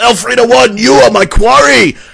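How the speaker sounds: very high, drawn-out, rasping in-character yell. Moving up in combat and declaring a target: in-character yell. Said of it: "I'm gonna yell".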